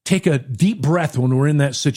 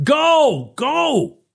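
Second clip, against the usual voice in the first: mock very high, shrill, impatient scream; 11 semitones higher than usual. Retelling an impatient driver honking behind them, retelling a driver screaming. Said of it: "he's screaming at me".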